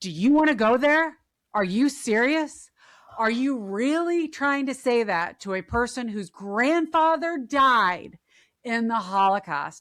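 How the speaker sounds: mock erupting, loud, furious, outraged yelling. Retelling how a woman erupted at being called an anti-Semite, imitating someone shouting. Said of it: "She starts shouting".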